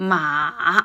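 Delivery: ma with falling-rising third tone, dipping then rising. Teaching mandarin tones, the speaker says the third-tone syllable: dipping then rising tone. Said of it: "my voice first dropped a bit and then rose".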